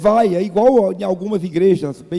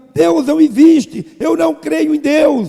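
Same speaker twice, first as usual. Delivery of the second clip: mock yelled, loud, high proclamation-style shout; 8 semitones higher, 5 dB louder than usual. Retelling a young woman interrupting a street play, imitating someone shouting. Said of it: "e gritando".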